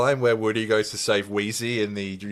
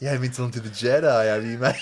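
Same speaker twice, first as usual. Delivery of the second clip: put-on condescending voice. Doing a Star Wars bit for the co-host: Ben Mendelsohn impression. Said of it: "Ben Mendelsohn in Star Wars".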